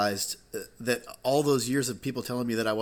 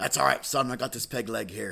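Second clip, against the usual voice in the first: put-on pirate voice. Telling a story, the speaker quotes a pirate's reply in a pirate voice. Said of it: "there was a real life pirate".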